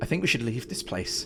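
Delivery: ordinary delivery, nothing marked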